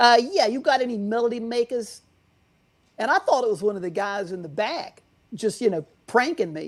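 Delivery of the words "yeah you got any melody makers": put-on laid-on-thick New York accent. Retelling what a caller said on the phone, in the thickest new york accent. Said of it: "in the thickest New York accent you've ever heard".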